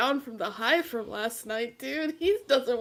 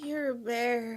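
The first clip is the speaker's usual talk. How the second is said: tired-out, exhausted, weary, worn-out delivery; 4 dB quieter than usual. Voicing Tiny in the game, speaking to Yarrow: tired Tiny. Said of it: "look at him, like, tiredly".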